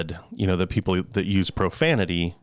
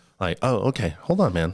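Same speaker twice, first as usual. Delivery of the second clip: ordinary talk, nothing marked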